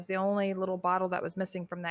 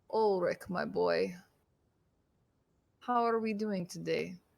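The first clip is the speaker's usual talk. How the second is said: vampire lord character voice. Game master speaking to Ulrich as a voice in his mind, Strahd von Zarovich voice. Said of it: "you recognize that voice as Strahd von Zarevich's voice".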